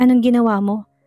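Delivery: ordinary delivery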